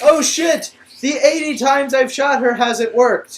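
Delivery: very high, very loud, shrill dumb soldier voice. Mocking movie fight scenes, doing a dumb soldier impression. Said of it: "here here is my impression of one of the soldiers".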